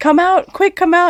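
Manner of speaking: urgent, called-out voice.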